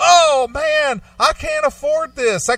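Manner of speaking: very high, drawn-out, theatrical, overdramatic overreaction. Retelling a traffic stop, act out the pulled-over driver getting all dramatic. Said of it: "he was just getting all dramatic".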